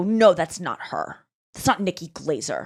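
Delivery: put-on low, angry, cross voice. Retelling what a man said to his wife, imitating an angry man. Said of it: "he was like mad at her".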